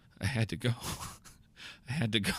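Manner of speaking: soft, repeated mumbling under the breath. Acting out an arrested man riding in the cop car: muttering. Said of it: "all you hear the guy muttering is".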